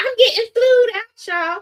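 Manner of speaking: put-on very high, shrill, giddy, gushing overexcited voice. Imitating a man who got overexcited about being flown out: imitating an overexcited man. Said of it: "he getting excited like he one of the city girls".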